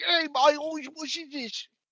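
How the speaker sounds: put-on Cockney voice. Telling friends how he voices a game character, in Valen's voice. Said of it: "Every time I talk Valen's voice".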